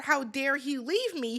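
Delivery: ordinary talk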